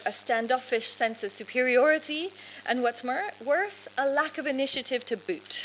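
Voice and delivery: ordinary talk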